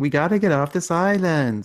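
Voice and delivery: light, half-committed Colombian accent. Having picked an actress for the movie star, try her line as Sofia Vergara, attempted Colombian accent. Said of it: "is that your Colombian accent?".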